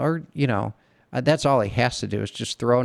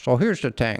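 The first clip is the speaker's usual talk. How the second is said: put-on Indian English accent. Recalling a Brazilian coworker who imitated an Indian coworker, imitating Ron. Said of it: "my imitation of a Brazilian guy imitating an Indian guy".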